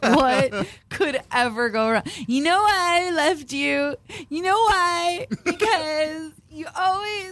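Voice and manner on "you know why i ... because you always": heated, angry, pitched-up voice. Acting out a guy from a breakup show arguing with his ex: acting out the guy in a breakup fight. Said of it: "That was me doing the guy".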